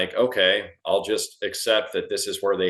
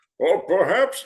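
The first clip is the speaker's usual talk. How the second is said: weird villain voice pitched much higher; 11 semitones higher, 4 dB louder than usual. Retelling a movie scene to a friend, doing a weird Bane voice. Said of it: "his weird voice".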